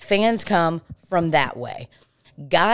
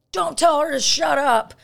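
put-on shrill, raw, very high yell; 10 semitones higher than usual. Retelling how a guy suddenly yelled at one of the girls, retelling a yell. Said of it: "starts yelling at one of the girls and was like".

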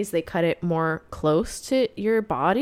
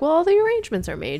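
playful, teasing, joking voice, way up high; 10 semitones higher, 3 dB louder than usual. Retelling what he said to her about the wedding, acting out a joking remark.

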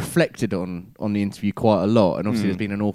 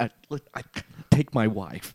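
swooping, stumbling voice, pitch rolling up and down; 4 dB quieter than usual. Showing what Woody Allen sounds like, voice going up and down. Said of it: "Woody Allen's a bit more like this".

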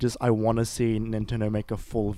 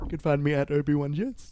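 talking through a yawn, much higher; 5 semitones higher than usual. Giving your Twitter handle to listeners, yawning while speaking. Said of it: "I yawned while I was saying that".

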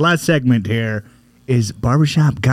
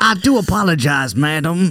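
put-on light Southern accent, slow drawl; 4 semitones higher than usual. Acting out Rodney's excuse for bumping into someone: slight Southern accent as Rodney. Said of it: "why does Rodney have a slight Southern accent?".

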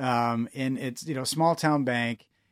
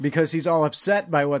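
normal talking voice

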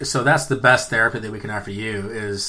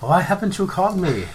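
put-on German accent; 7 semitones higher than usual. Speaker imitates their mother scolding them: German-accented mom impression. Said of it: "it sounded very German for some reason".

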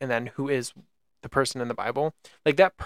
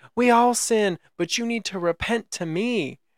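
slow, drawn-out scream; 9 semitones higher than usual. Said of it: "screaming at this guy".

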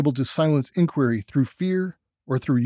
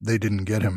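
heavy bass mutter, much lower pitch; 6 semitones lower than usual. Narrator reads a character after a death as hill noises rumble: muttered in heavy bass. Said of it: "he muttered in his heavy bass voice".

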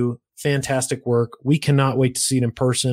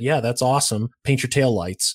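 usual speaking voice

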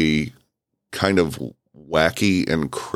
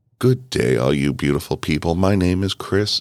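calm, relaxing, mellow customer-service voice. Speaker demonstrates the voice he uses with customers needing attention, mellow customer service voice. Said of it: "throw on that customer service voice".

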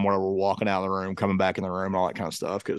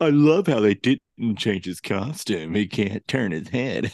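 slow, mocking put-on voice. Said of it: "sounded more of like a mockery".

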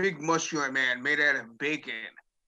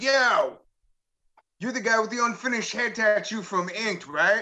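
put-on high shouted call across a distance; 7 semitones higher, 4 dB louder than usual. Recounting spotting a man from Inked on the street, retelling a yell. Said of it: "You're yelling at a guy down the street".

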